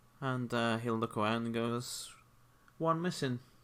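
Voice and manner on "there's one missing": understated, low-key, slightly higher, half to oneself. Narrator voicing a character who looks around; talking in a quieter tone. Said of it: "talking in a quieter tone".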